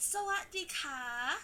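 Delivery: put-on kindergarten-teacher voice, tone for a small child. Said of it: "it goes very like I'm a kindergarten teacher".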